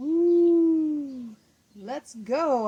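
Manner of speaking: very loud, drawn-out howling monster cry. Reading a spooky story, the werewolf speaks: howling. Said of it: "howled the werewolf".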